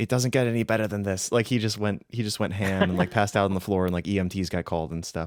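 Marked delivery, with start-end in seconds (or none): none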